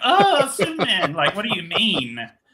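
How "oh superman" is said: very high, loud, sobbing, crying wail. Teasing the other speaker about crying at a trailer: mock crying. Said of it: "you were crying at the end of it, going".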